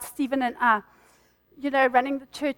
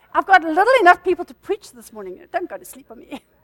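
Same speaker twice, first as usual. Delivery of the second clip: loud, sing-song playful teasing; 4 semitones higher, 6 dB louder than usual. Preaching, you tease a listener who is falling asleep to wake up: teasing. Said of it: "and I'm teasing you".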